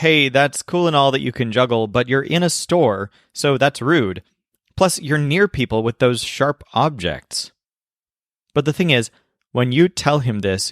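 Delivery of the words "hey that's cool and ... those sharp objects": ordinary talk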